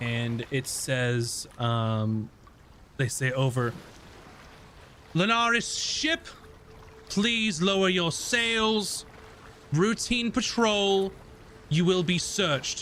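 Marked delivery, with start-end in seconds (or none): 5.1-12.8 otherworldly supernatural voice, high and fast. Game narrator voices a patrol ship hailing the players' ship, supernatural loud voice. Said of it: "almost a sort of supernatural loud voice".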